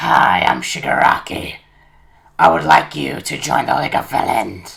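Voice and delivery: very loud, very raspy, rough villain voice. In a role-play, Deku hears a villain introduce himself in a very raspy Shigaraki voice. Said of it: "Deku hears a very raspy voice".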